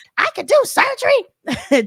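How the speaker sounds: put-on very high, drawn-out, wailing banshee shriek. Recount Simone's reaction after Heavenly pushed her loud button, imitating Simone screaming like a banshee. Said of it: "Simone started screaming like a banshee".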